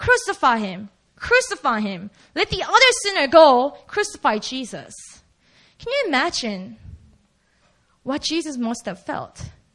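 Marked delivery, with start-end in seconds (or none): none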